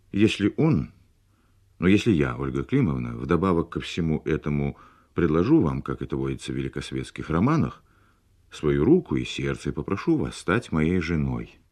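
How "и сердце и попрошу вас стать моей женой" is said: plain reading voice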